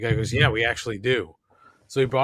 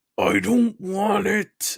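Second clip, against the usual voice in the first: high-pitched, forced through clenched, gritted teeth; 9 semitones higher than usual. Speaker retells what he said while looking at the speaker, imitating talking through clenched teeth. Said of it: "through clenched teeth".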